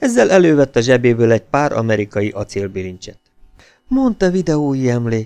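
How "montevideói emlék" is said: tender, fond, soft whisper. A narrator reads a character producing a pair of handcuffs, tender whisper. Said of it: "suttogta ellágyulva".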